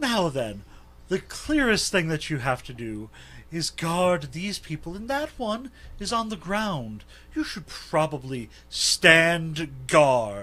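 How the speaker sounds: mischievous, playful sing-song. A player voicing his character turning to a guard, with a puckish cadence. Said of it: "with a puckish cadence in his voice".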